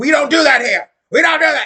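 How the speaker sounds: shrill, high, loud top-of-lungs screaming rant. Retelling what a doctor said on the phone: imitating someone screaming. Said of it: "He was screaming at the top of his lungs".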